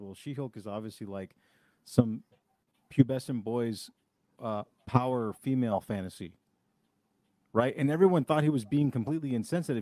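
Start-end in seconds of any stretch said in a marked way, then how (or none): none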